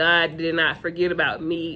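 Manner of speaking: ordinary talk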